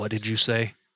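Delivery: very deep bass voice, suddenly dropped. Voicing a man who spins around toward the one who spoke: very deep, booming voice. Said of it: "spins around in a very deep, booming voice".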